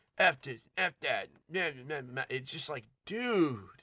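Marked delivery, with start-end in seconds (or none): 0.2-2.2 blurted-out YouTuber-style voice. Retelling how a game character swears: imitating someone talking like a YouTuber. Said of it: "so he talks like a YouTuber".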